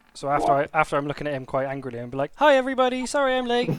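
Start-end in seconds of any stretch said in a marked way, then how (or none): 2.4-3.7 really friendly, very high, loud voice. In a tabletop game, a player's character greets everyone, really friendly. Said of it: "like really friendly".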